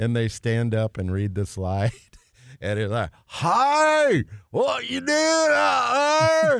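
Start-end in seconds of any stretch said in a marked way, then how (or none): 3.3-6.6 very high, slow East Texas drawl with "hi" stretched. Describing students reading slides in accents, in an east texas accent. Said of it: "your best East Texas accent".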